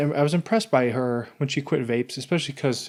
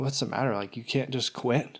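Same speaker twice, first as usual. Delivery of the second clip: acted, needling, challenging taunting jab; 6 dB quieter than usual. Retelling what the wife said in a store: imitating a tough-love jab. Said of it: "she said it like that".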